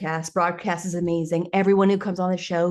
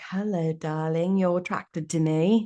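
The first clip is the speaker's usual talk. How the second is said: acted English-accented speech. Describing a style of clothes, in an English accent. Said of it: "why my I do an English accent for that".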